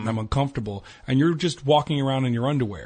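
ordinary talk

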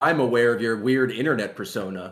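normal talking voice

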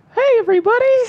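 very high, loud, squeaky cartoon mouse voice. Asked to do the voice for a pitched Mickey movie, [name] does a Mickey voice. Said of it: "[name], do the voice".

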